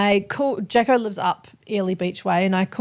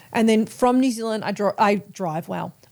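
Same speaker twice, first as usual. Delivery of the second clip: ordinary delivery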